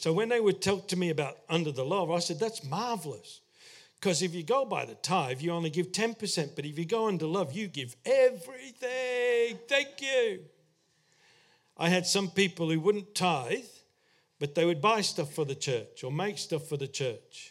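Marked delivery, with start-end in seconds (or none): 2.4-10.4 sarcasm running all through it. Retelling a past reply to people arguing against tithing: own sarcastic reply. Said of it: "I used to be a little bit sarcastic".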